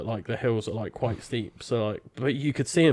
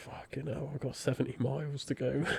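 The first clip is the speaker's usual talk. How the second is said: put-on crying while speaking, quieter; 12 dB quieter than usual. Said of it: "I was sat in a ditch crying".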